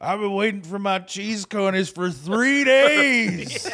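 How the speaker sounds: put-on very loud, high drunken man's yell. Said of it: "he started yelling at the lady".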